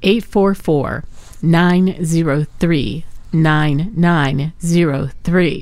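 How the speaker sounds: slow, deliberate, each digit spaced out with care. Host giving the station's donation phone number to listeners, said slowly. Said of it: "I'm going to say this slow".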